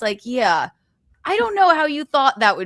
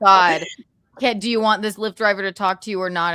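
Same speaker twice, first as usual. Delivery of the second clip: plain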